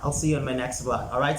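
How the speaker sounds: rushed, very fast, rattled-off delivery.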